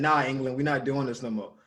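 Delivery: ordinary delivery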